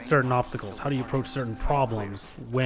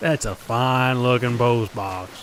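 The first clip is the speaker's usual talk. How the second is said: louder mock sarcastic voice; 5 dB louder than usual. Repeating a game character's line back at him: imitating Die Hard Man's sarcasm. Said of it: "Could you not sound any more sarcastic, Die Hard man?".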